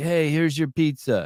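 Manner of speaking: slow, friendly mobster voice. Imitating the other speaker as a nice mafia guy: imitating a nice mafia guy. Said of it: "you're like".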